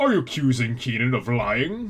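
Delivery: alien creature voice. Quoting what someone said about Chris and his driver's test: Zerg-like voice. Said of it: "That sounds more like a Zerg voice".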